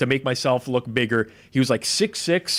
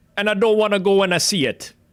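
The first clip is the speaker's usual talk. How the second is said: horrible, bad patois accent, pitched high; 7 semitones higher, 3 dB louder than usual. Quoting a former coworker's saying: horrible impression of a coworker's patois. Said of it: "It's a horrible impression".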